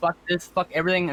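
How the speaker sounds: usual speaking voice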